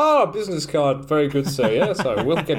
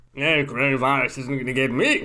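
put-on stiff-upper-lip elderly English gentleman voice. Podcast co-host introduced as sounding like an elderly Englishman: elderly English gentleman voice. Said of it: "Sounding like a very elderly English gentleman".

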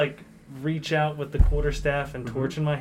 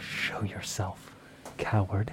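soft, hushed, breathy whisper; 7 semitones lower, 8 dB quieter than usual. Describing a character's icy hand gesture in a game, then whispering. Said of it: "And I'll just whisper".

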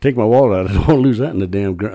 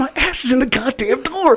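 mock, very high-pitched screaming. Retelling being pinched in a truck door: imitating someone screaming. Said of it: "I'm just screaming".

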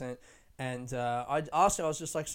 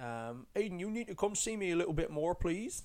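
put-on Bristol accent; 3 semitones higher, 4 dB quieter than usual. Retelling chatting to a man from near Bristol, in a put-on Bristol accent. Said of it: "I did that accent".

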